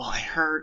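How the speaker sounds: high, confiding, leaning-in whisper. Retelling a TV scene where Phyllis leans in: imitating Phyllis whispering. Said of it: "she starts whispering".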